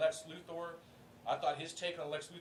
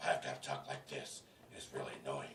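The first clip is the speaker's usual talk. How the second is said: put-on, gravelly, lower superhero voice; 4 dB quieter than usual. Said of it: "this is my brother's complaint".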